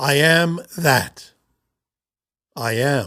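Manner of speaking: very slow delivery, with a pause after "that". Explaining a phrase in the context of an infinite universe, pause after that. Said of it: "with the simple addition of a comma or a pause after the word that".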